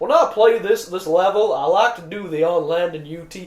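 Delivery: put-on very loud, slow drawling Southern accent, laid-back male voice. Imitating a forum player who sounds like a southern guy: imitating a southern accent. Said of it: "he sounds just like some southern dude's just like".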